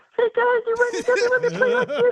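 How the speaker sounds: very high, squeaky voice. Retelling the first time hearing a player talk: Vern Fleming squeaky voice. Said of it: "he had a really squeaky voice".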